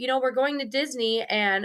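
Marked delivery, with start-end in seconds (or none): none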